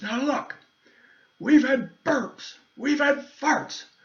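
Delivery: put-on indignant man voice. Retelling a security guy's tirade while being grilled: imitating an indignant, outraged man. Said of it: "the guy was so indignant and outraged".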